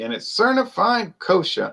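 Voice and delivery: high, swooping broadcaster-style announcer voice. Speaker always says this line in a Howard Cosell voice. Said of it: "I always say it like Howard Cosell".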